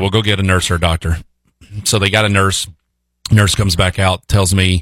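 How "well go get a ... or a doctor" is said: plain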